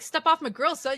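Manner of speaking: put-on slangy manner. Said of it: "you weren't like".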